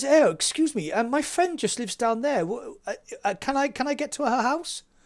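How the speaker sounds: high, very posh, well-to-do lady voice. Retelling what a driver asked at a flooded road: imitating a very posh woman. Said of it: "very posh woman".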